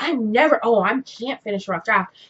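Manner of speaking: ordinary talk, nothing marked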